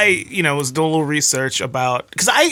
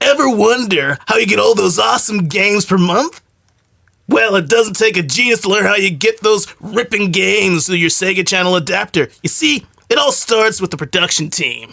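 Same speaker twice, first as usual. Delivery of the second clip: put-on nineties douchey voice, higher; 5 semitones higher than usual. Reading a website's how-it-works page aloud: nineties douchey voice. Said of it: "in my most nineties douchey voice".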